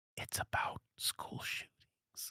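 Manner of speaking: very quiet, slow, drawn-out whisper. Mocking a movie's obvious message as if telling someone: imitating a whisper. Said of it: "Somebody whispers in your ear".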